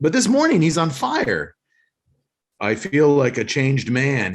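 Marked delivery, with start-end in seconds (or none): 2.6-4.3 flat, robotic, dead-flat monotone. Recapping a scene where Stig plays drums unusually well, Stig in flat robotic voice. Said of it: "he says in a flat, robotic, non-Australian voice".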